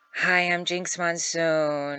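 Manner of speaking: bad Midwest accent, slow and high-pitched. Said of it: "I kind of went Midwest".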